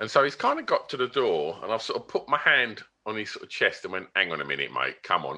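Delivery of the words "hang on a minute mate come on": mock very low, good-natured, laughing, unaggressive tone. Retelling stopping a man at the door, hand on his chest, in a laughing way. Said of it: "not in an aggressive way, like in a laughing way".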